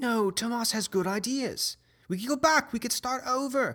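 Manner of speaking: very high-pitched female character voice. Voicing a woman in an arguing crowd: female NPC voice. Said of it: "one female voice says".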